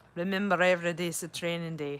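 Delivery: would-be, attempted British accent. Quoting what he says, in an attempted british accent. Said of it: "talking like a British person, but now I don't talk. I'm sound French".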